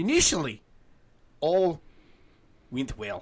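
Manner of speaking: reading aloud, gradually drifting into a Scottish accent. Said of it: "See? I don't know why".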